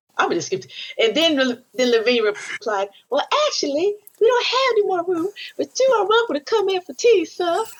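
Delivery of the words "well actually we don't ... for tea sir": meek, servile house-servant voice, very high pitched. Retelling another person's reply to listeners, in a put-on house-slave voice.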